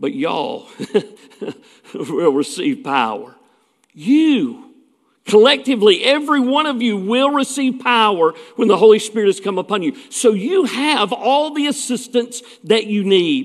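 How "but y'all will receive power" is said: southern American drawl, southern accent on y'all. Showing how the verse would sound if said from the South: Southern US accent. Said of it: "If he were from the South".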